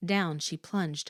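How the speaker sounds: ordinary delivery, nothing marked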